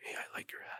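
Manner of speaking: very quiet, hushed, barely voiced whisper. Retelling what a cuban man seated next to him on a plane said, imitating a whisper. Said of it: "He's like whispering".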